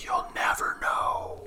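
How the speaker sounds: soft, breathy, barely voiced whisper. Describing a voice heard on a recorder: imitating a whispering voice. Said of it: "It's almost like a whisper".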